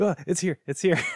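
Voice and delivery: frightened, panicky, very high-pitched cry. Retelling how she reacted when the ghost appeared: imitating terrified panic. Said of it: "She was so terrified".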